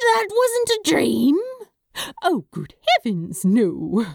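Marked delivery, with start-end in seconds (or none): 2.2-4.0 chuckling, slower. Narrator reading one character's reply to another, with a chuckle. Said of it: "Aziraphale said with a chuckle".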